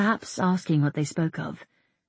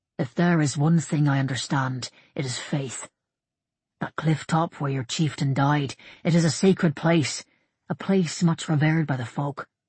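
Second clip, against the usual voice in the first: ordinary delivery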